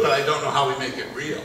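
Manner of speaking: ordinary talk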